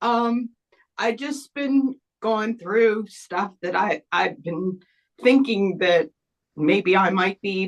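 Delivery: tearful crying, voice breaking. Answering a question about their own sensitivity, while crying. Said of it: "I don't know why I'm crying".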